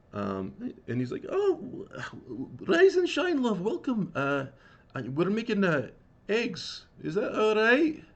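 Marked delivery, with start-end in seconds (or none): 1.3-7.9 tiny, very high, sing-song little bird voice. Voicing a little bird greeting the players about breakfast eggs: voicing a little bird. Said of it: "a little bird kinda hops down the stairs".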